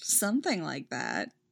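amused, entertained tone. Alia answers Marinette: amused.

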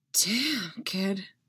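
said on a breath. Narrator voices Han answering Luke, who has just drawn away; breathed. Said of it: "Han breathed".

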